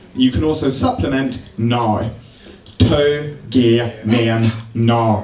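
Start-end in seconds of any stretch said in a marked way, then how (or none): 2.8-5.3 Belfast accent, very slow and drawn out. Speaker demonstrates a phrase for listeners, northern irish accent. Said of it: "And that's Northern Irish".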